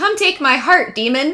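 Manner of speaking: high, daring, provoking shout. Retelling how someone lay on a pentagram spot: imitating Shane shouting. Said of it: "just starts shouting".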